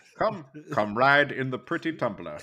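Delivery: put-on British-accented delivery. In a chat about impressions, the speaker does a line as a Michael Caine impression. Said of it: "finally, someone can do Michael Caine".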